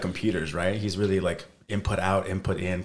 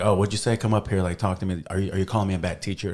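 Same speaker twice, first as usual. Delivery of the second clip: ordinary talk, nothing marked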